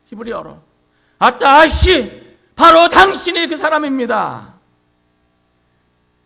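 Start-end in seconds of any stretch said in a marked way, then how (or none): 1.1-4.5 high, loud, slow and fiery cry. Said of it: "이 불같은 나단의 외침".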